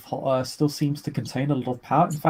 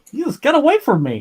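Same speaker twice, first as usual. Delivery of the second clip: embarrassing, very high, loud squeal and yelp; 12 semitones higher, 8 dB louder than usual. Describing footage of a man running back over a bridge, [name]'s put-on high embarrassing tone. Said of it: "in a rather high and sort of embarrassing tone".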